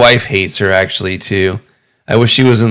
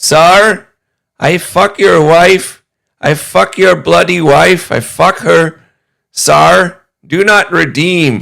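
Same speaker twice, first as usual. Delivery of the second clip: put-on Indian accent, very high-pitched; 9 semitones higher, 4 dB louder than usual. Retelling what an Indian man says to the husband, imitating an Indian accent. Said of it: "with this accent as he's going".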